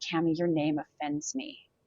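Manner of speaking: voice dropped low. Retelling a man stepping up right in your face in a circle, imitating a lowered voice. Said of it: "he lowers his voice and he goes".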